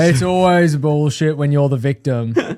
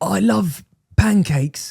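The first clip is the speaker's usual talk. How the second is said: fake, put-on English accent, pitched up; 5 semitones higher than usual. Asked for an English accent, saying a line for the other to copy: put-on English accent. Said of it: "English accent right now".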